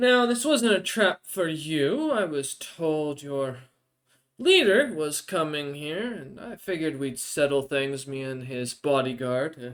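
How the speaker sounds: smiling character voice, spoken through a smile. Voicing a blood-splattered foe who smiles while speaking: Brightbeard character voice, smiling. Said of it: "kinda smiles at you and goes".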